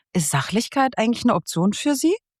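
high-pitched, puzzled and unsure. Showing a way to introduce something as host, asking a perplexed, unsure question. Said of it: "So ein bisschen perplex".

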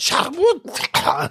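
very high voice, cracking and breaking apart. Retelling a stranger's voice cracking when upset: imitating a voice cracking with rage. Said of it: "wenn er aufgeregt war, so gebrochen ist".

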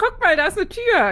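bright, sunny, very cheerful, very high, loud. In a scene about a door, pointing out the door very cheerfully. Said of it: "Jetzt sage ich das viel, viel fröhlicher einfach".

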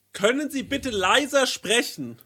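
mock, high-pitched, loud yelling. Retelling what a woman across the street shouted: imitating a woman yelling. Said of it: "schreit eine Frau mich an und sagt so".

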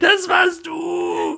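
very high, shrill, rough, raspy screeching scream. Retelling being screamed at after a fart in the car, retelling a scream. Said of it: "dann hat sich mich das angeschrien".

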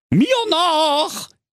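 high calling out, "nach" drawn out. Reading a comic fairy tale aloud, the count calling everyone to follow: calling out. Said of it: "rief der Graf Spacko".

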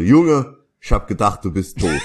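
spoken in Kölsch dialect. Retelling what the sound engineer said to them: strong Cologne dialect. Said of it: "macht dann so im besten kölschen Dialekt, macht er so".

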